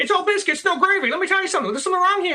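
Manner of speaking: put-on old-time Chicago newsroom voice. Showing how she talks in a Harrison Ford movie, do a Lois Lane, 1930s Chicago reporter voice. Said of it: "kind of like a nineteen thirties Chicago reporter voice".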